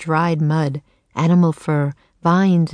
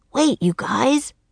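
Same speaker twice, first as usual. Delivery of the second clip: high, croaky, raven-like cry; 7 semitones higher than usual. Narrator reading a bird character calling after his friends as they fly off, croaking. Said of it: "He fluffed out his feathers and croaked".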